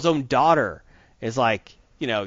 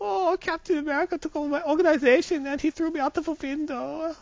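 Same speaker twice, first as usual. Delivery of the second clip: put-on German accent, pitched very high; 4 dB quieter than usual. Telling about a comic that made him feel sorry for Red Skull; Red Skull German accent. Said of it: "Your German accent's better than your Boston accent".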